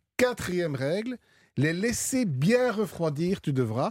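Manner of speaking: slow Belgian accent with words stretched out.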